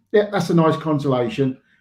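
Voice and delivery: ordinary delivery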